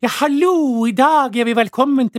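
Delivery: exaggerated northern Norwegian accent. Mocking a radio presenter who overdoes the dialect, exaggerated Northern Norwegian accent. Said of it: "som overdriver dialekten".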